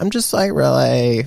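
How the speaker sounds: whiny influencer voice. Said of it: "I did the whiny voice when I do Instagram".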